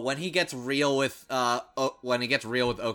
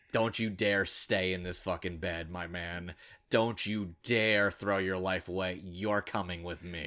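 put-on stern, serious voice, lower and quieter; 4 semitones lower, 4 dB quieter than usual. Retelling a character's line in a scene: imitating a stern, serious voice. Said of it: "drops the voice down to a very stern, serious".

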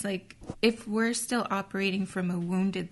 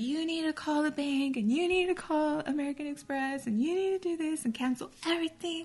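put-on angry, barked, pitched-up, pissed-off rant; 8 semitones higher than usual. Retelling a man who was upset after losing his wallet, mimicking an angry rant. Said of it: "he's like all pissed and like".

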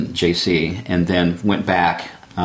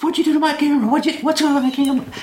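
mock yelling, much higher and faster. Retelling how the guest reacted after the speaker dropped something in the river, retelling a yell. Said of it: "he starts yelling".

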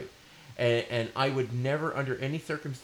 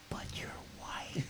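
very quiet, breathy, barely audible whisper. Retelling what a passenger said from behind: imitating a passenger whispering. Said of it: "he even said that in a whisper".

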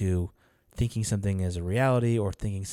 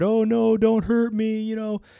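very high, slow, acted frightened pleading; 8 dB louder than usual. Describing a show character chased by a bunch of guys: imitating a scared plea. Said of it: "like really scared".

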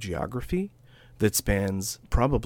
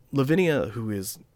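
usual speaking voice

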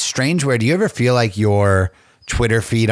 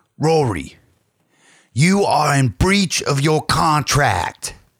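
blunt, stern delivery with a higher voice; 5 semitones higher than usual. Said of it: "Can I do my [name] impression?".

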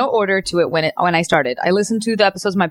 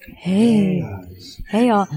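sultry, sexy late-night radio DJ voice. Imitating how female radio DJs greeted listeners, sexy radio DJ voice. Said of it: "They did the real sexy voice".

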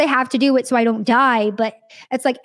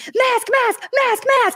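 mock very high, stretched-out, drawn-out screaming; 11 semitones higher than usual. Telling about a guy who suddenly started screaming at the group; retelling a man screaming. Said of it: "he starts screaming".

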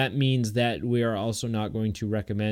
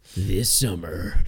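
movie trailer narrator voice, lower; 4 semitones lower than usual. Retelling a joke trailer on a wireless mic before a movie: movie trailer voiceover voice. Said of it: "Like the movie voiceover thing".

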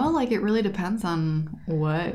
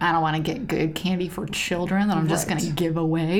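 plain

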